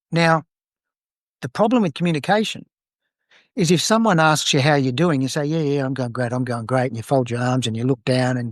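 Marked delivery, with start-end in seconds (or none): 5.4-6.8 dejected, downcast tone. Showing a mismatched answer to how you're doing: sounding all down. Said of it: "you sound all down".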